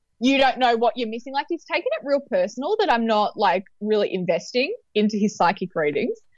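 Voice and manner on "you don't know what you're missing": put-on sassy tone. Describing emails from a psychic, the speaker quotes him: mocking a sassy tone. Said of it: "he was like real sassy".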